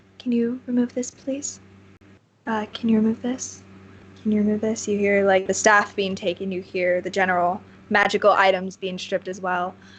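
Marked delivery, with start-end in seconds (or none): 0.2-4.9 low-key, quiet, soft-spoken voice. Narrating a game scene, voicing an unseen speaker to a player, soft-spoken voice. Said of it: "you hear a soft-spoken voice".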